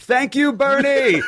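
sudden blurted scream at very high pitch. Retelling how he screamed at a man shaking hands on a crowded street: retelling his own scream. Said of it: "so I just screamed".

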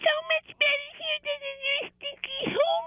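very high, small pet poodle voice. Pretending the poodle is talking on the phone to her owner: voicing the poodle Boosh. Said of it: "that was Boosh talking".

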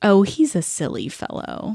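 Southern US accent. Showing how the phrase silly fellow sounds: southern accent. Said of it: "kind of like a Southern".

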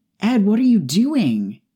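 very high, loud hissing. Narrating a trapped woman questioning ed as she struggles, hissing. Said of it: "She hissed as she struggled".

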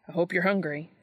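ordinary delivery

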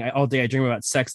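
plain

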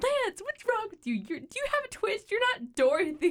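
high-pitched yelling. Retelling a parent yelling at the other parent: imitating mom yelling. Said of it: "she just yells".

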